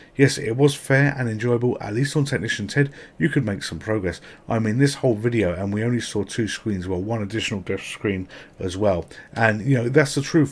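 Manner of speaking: ordinary talk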